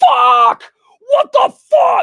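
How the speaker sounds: very loud, very high, drawn-out furious shrieking. Speaker recounts yelling while the dogs were loud, retelling an angry yell. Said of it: "I kept yelling because I was so angry".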